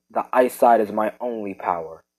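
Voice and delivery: ordinary talk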